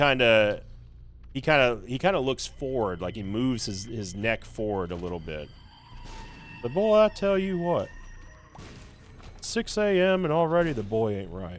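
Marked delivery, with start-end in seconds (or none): 6.6-11.6 pitched-up, swooping, sing-song voice from side of mouth. Showing how the voice actor does Hank: Hank Hill voice. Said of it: "when he does the voice of Hank".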